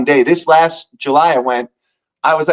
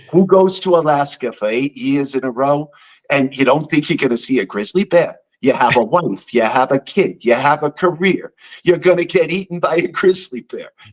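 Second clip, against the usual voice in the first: put-on New York-accented speech.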